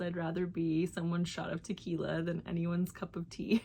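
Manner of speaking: ordinary talk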